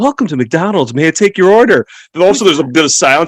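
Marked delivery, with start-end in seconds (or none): 0.0-1.9 very polished, smooth, practiced, sweet service voice. Imitating a McDonald's drive-through worker greeting a customer, in a very polished drive-through voice. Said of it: "this very, very polished voice".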